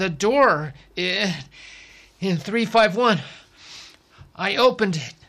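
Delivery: panting, out of breath. Dune answers Lena's urgent questions, panting, out of breath. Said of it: "he panted".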